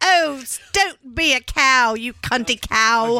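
put-on cockney London accent. Describing how her friends talk, quoting them in a cockney accent. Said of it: "talk with their cockney accent and say".

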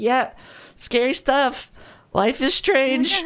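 high, awkward placating tone.

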